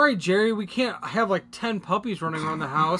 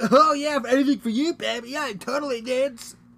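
put-on sixteen-year-old guy voice, pitched up; 6 semitones higher than usual. Imitating what the sixteen-year-old guy in the movie says: mocking the teen guy character. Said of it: "all he was saying".

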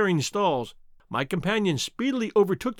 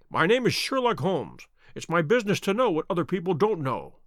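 plain reading voice

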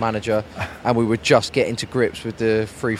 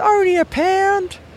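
voice pushed very high in pitch; 5 dB louder than usual. Retelling bumping into Dave outside a game: impression of Dave. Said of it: "that was a really good impression again".

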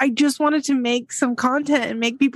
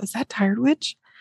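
hushed stage half-whisper; 2 semitones lower, 3 dB quieter than usual. Recalling a younger stranger at Ulta half-whispering to a friend, imitating a half-whisper. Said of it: "they whispered".

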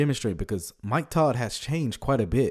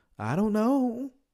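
very high, squirming, squeamish little voice; 13 semitones higher than usual. Retelling an interview answer on whether Muslims go to heaven: squeamish Joel Osteen voice. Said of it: "In the squeamish Joel Osteen voice".

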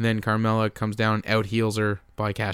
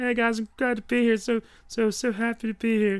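very high, put-on puppet-show voice; 13 semitones higher than usual. Playing the introduced guest, Ronda Rousey: Ronda Rousey impression, Muppet voice. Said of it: "Why do you sound like a Muppet?".

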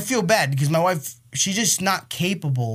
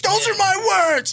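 put-on child tantrum yell, higher and louder; 5 dB louder than usual. Retelling how a child reacted to being told to calm down: imitating a child losing his mind. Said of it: "he's losing his mind".

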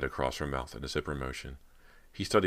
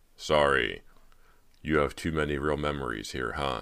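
plain reading voice

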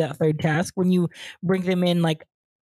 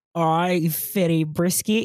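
attempted Cockney accent sliding into Australian accent. Asked to say a line in a Cockney accent, a Cockney attempt sounding Australian. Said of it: "you're still doing Australian".

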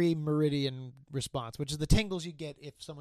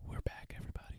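soft, hushed ASMR-style whispering. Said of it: "Stop whispering".

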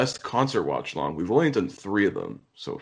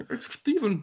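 put-on lisping voice, higher. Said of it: "with a lisp".

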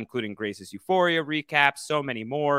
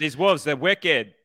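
put-on Boston accent, much higher pitch; 3 semitones higher, 3 dB louder than usual. Discussing a show that skipped Boston accents, the speaker tries a Boston accent. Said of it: "Boston accents".

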